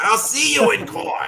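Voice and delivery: shrill, blaring, loud comic yell. Joking around, the speaker delivers the line as a Gilbert Gottfried impression. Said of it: "Get your Gilbert Godfrey voice going for that".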